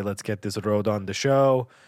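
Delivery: ordinary talk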